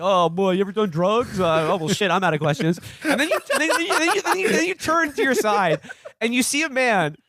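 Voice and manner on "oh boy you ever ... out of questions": mock mouth-full speech, higher pitch. Acting out a police uncle questioning a victim: imitating talking with lollipops in mouth. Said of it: "he's got three lollipops in his mouth, just being like".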